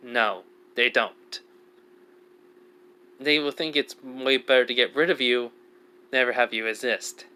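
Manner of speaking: very serious, grave, no-nonsense tone. Retelling what another person said in reply, retelling a very serious tone. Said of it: "Which Kasha says in a very, very serious tone".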